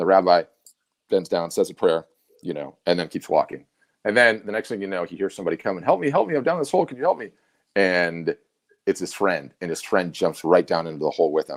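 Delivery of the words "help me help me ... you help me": acted, very high yell. Telling a joke about a man stuck in a hole, retelling a yell for help. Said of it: "he's yelling in the hole".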